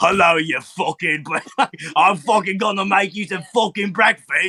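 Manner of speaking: casual put-on British male accent. Saying people find accents charming, imitating a British guy accent. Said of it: "have you ever heard a British guy that's like".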